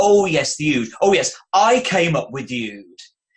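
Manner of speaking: proud, smug, self-satisfied tone. Retelling a TV interview moment: imitating Russell T Davies claiming credit. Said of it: "it was the way he said it".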